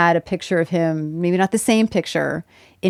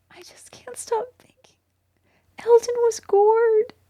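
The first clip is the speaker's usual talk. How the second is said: very high, heartfelt, acted emotional delivery. Retelling what a co-star whispered between takes: imitating an emotional tone. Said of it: "in that same sort of tone that I'm doing".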